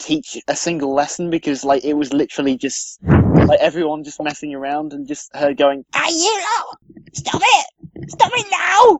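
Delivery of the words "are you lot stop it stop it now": very high, squeaky, drawn-out voice. Imitate a teacher telling off a class that is messing around, in a really squeaky Missus Squeaker voice. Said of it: "she had a really really squeaky voice".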